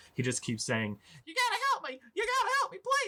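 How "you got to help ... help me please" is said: very high, rushed, frantic, panicky gnome voice. Narrating a scene, voicing a gnome talking to two town guards, higher-pitched voice. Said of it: "It's a little bit of a higher pitched voice".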